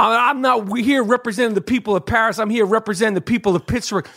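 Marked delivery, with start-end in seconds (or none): none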